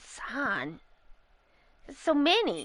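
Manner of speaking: soft, drawn-out chuckling tone, laugh in the words. Quoting how he says son, imitating a laugh in his voice. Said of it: "you can kind of hear a laugh in his voice".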